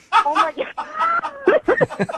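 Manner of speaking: mortified, high, slow laughing shriek.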